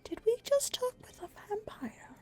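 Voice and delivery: very high, tiny, high-pitched stage whisper. Voicing a character asking others after a vampire leaves: stage whisper. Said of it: "I'm going to stage whisper".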